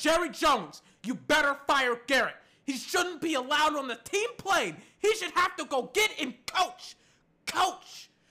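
mock, screamed, yelled tirade. Retelling screaming at the tv about the coach: retelling a scream at the tv. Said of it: "I screamed at my T V".

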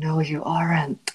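whispering. Replying in character to another player, whispering. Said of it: "and Caspian whispers".

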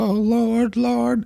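very high, tearful, crying voice. Retelling a man's plea before he was shot, imitating someone crying. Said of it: "he was all crying and being like".

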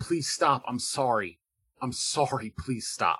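pleading, apologetic, begging voice full of sorrow. Voicing the thoughts of an unconscious man in a game: pleading. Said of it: "you can almost hear the voice".

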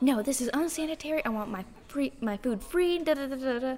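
mock freaking out. Retelling a woman yelling about dirty forks, mock freaking out. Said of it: "she's freaking out".

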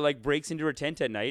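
ordinary talk

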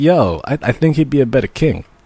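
plain

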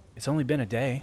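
ordinary delivery

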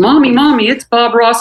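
put-on high-pitched small girl voice, screaming out. Recalling a little girl who spotted bob ross in the crowd, imitating a little girl screaming. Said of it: "she screamed at the top of her lungs".

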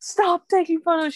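put-on high screaming, strained as if pushing. During labour, mom keeps taking photos; retelling screaming at mom. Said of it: "And I'm screaming at my mom".

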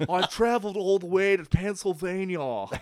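clumsy put-on English accent. Imitating an actor's weird English accent from an old film. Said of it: "Keanu's weird English accent".

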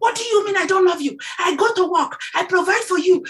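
high-pitched, indignant, angry yelling. Acting out your sister going off at your nephew, retelling a scream. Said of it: "And she was screaming".

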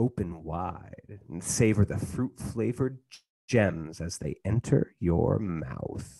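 perverted voice. Asked what he says to Lucy, reading the line in a perverted voice. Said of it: "[name] does this very perverted voice".

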